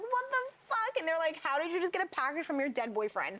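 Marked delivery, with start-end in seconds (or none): 0.0-1.0 acted hysterical panic, very high-pitched. Retelling screaming for friends to come upstairs, retelling being hysterical. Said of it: "I'm like hysterical".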